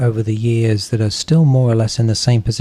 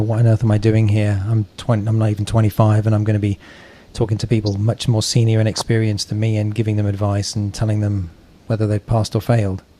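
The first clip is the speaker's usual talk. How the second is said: ordinary delivery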